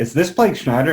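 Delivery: put-on thick, high, loud Southern country-lady accent. Retelling a phone call from a stranger, imitating a super country lady. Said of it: "super country lady".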